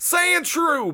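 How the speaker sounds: put-on high, slow country accent holler. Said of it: "they made this guy country".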